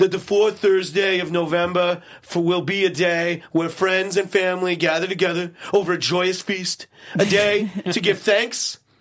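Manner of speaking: put-on impression voice, stuffy and congested.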